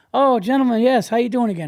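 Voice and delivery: put-on odd, old-fashioned manner, high and loud. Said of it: "And he's like, like that".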